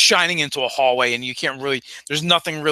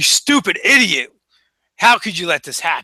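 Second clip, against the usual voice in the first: harsh, angry voice with swooping pitch; 4 semitones higher, 4 dB louder than usual. The game master voices a boss berating an underling as a player sneaks in: angry boss voice. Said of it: "closer to the more angry sounding voice".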